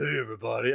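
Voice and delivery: big hulking muscleman voice. Imagining how the transformed hero should talk: voice matching huge muscles. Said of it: "a voice to match her, like, huge muscles".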